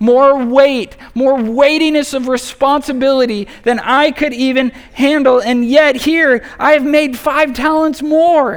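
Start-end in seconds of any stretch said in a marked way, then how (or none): 5.4-8.6 glad, joyous, joyful tone. Reading the servant's words from the parable aloud; joyful voice. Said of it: "just hear the joy in his voice".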